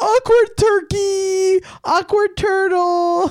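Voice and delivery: very high, stretched-out, drawn-out holler. Retelling what a man yelled in a bar, retelling a yell. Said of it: "He yelled this in the bar".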